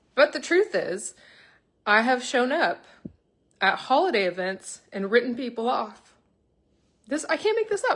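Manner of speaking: voice choked with emotion. Live, apologizing to people for past behavior, choked up. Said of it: "This is actually making me emotional".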